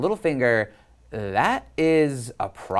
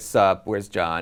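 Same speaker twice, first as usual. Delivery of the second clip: flat, lower-pitched put-on voice; 5 semitones lower than usual. Speaker recapping a show's reunion scene, quoting Bran: monotone Bran impression. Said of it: "he's completely monotone".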